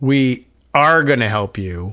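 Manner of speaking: slow, with stress on ARE drawn out.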